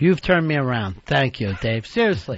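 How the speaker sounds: mocking, insincere, sarcastic tone. Answering another speaker's argument about Christmas spending: sarcastic. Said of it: "I detect some sarcasm there".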